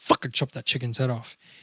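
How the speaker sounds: callous, psychopathic attitude. Explaining how past experience shapes answers, playing a callous psychopath. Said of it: "If I'm a bit of a psychopath".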